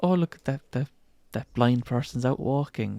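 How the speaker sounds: ordinary talk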